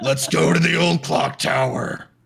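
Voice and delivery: half-voiced, high, loud stage whisper that carries. Voicing a character suggesting a trip to the clock tower: loud stage whisper. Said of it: "now you're being loud".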